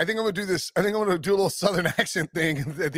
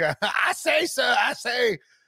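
exaggerated cartoon Southern accent voice; 5 semitones higher than usual. Describing how someone sounded: Foghorn Leghorn voice. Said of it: "He sounded like a Foghorn Leghorn. Like".

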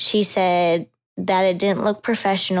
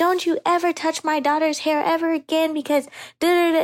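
mock angry yelling, much higher; 9 semitones higher than usual. Recalling her mom's reaction to a haircut, imitating mom yelling. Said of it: "my mom was heated, yelling at her".

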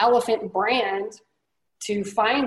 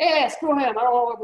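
Italian New York accent, laid on bold; 2 semitones higher than usual. Describing a kind of person you picture, act them out: bold Italian New Yorker accent. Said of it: "a great impression".

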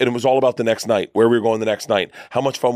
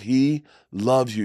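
imitated tearful pleading voice, quieter; 4 dB quieter than usual. Retelling what a fan's daughter said by the bus, imitating someone crying. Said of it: "his daughter starts crying, and she goes".

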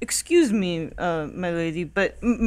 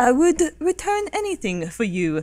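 put-on affected refined accent, slightly high pitch; 7 semitones higher than usual. Voicing Grima, who tries to affect a more refined accent. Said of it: "Grima tries to affect kind of in a more refined accent".

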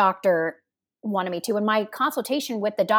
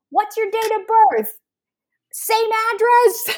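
shrill, loud yelling, raised and very high; 13 semitones higher, 5 dB louder than usual. Retelling how the ER front desk worker questioned the speaker: imitating someone yelling. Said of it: "she's yelling at me".

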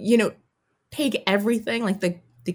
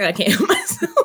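very high speech bubbling with giggles; 12 semitones higher, 4 dB louder than usual. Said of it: "I'm sorry I was giggling".

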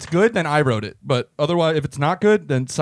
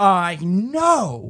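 know stretched out, drawn out, pitched higher; 5 semitones higher than usual. Explaining how Elaine sometimes talks, doing an Elaine impression with stretched words. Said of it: "She does stretch out the words like that sometimes".

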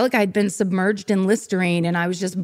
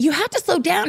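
distressed, upset, very high-pitched voice; 9 semitones higher than usual. Speaker retells a friend's girlfriend in a speeding car: imitating someone upset. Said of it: "and all upset".

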